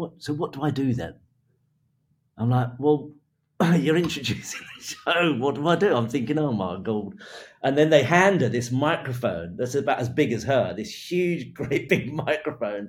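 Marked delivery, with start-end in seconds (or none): 0.0-1.1 tiny, small, wee little voice. Going backstage before a show, retelling a woman's question in a tiny little voice. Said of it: "in this tiny little voice".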